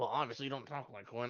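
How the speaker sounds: half-swallowed, soft mumble under the breath. Answering someone who claims to be an army commander, mumbled under the breath. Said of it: "I say that mumbling underneath my breath".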